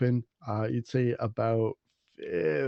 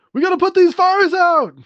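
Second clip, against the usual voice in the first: shrill, very high, very loud, hard yell; 12 dB louder than usual. A game narrator voices Valen shouting out at the top of the round; really high shout. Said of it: "in a really high voice for some reason".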